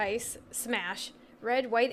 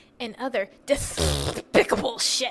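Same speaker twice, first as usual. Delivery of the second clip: put-on cartoon duck voice, louder; 4 dB louder than usual. Opening a podcast episode with your co-host, finish the intro with a Daffy Duck impression. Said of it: "that was a pretty good Daffy Duck impression".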